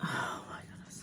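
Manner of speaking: soft, breathless whisper full of awe.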